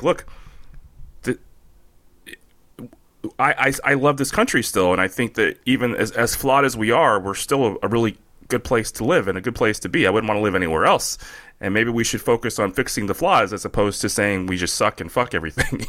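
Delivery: ordinary talk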